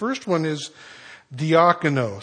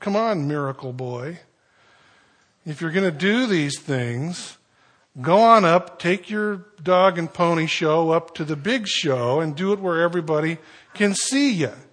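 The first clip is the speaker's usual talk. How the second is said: put-on derisive, mocking, taunting jeer; 3 semitones higher than usual. Voicing his brothers' imagined challenge to him, imitating a mocking tone. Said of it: "a real almost mocking tone".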